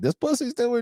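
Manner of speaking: mocking, very high falsetto.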